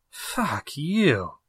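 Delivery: muttered under breath. One man answers another's rebuke, muttering under his breath. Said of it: "Ralph mutters under his breath".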